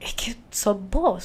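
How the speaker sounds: slow, soft voice breaking with emotion. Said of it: "con la voz quebradiza y todo".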